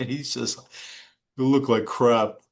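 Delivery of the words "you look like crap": put-on Brooklyn accent. Retelling what the boss said on seeing the speaker: imitating the boss's Brooklyn accent. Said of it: "he had the Brooklyn accent".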